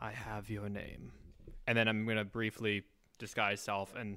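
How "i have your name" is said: hushed whisper, very close. Playing a character leaning close to an ear: whispering in ear. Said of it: "close to his ear and whisper".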